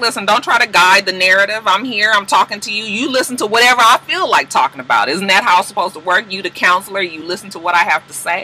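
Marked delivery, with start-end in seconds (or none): none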